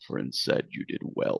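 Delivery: whispered, hushed, growled monster voice. Game narrator voicing a shadow creature speaking to him: growling shadow creature. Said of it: "it growls and says".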